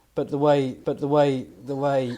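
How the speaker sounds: shouting.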